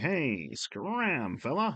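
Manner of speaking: high, thirties-style radio announcer voice. The speaker quotes what the security guard told them earlier, in 1930s radio voice. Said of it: "like the thirties radio voice".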